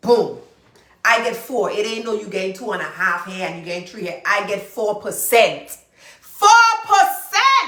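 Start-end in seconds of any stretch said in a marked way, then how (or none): 4.2-7.7 loud, swooping, drawn-out shout, stressing every word. A real estate agent addresses the audience, shouting. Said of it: "I know I'm shouting".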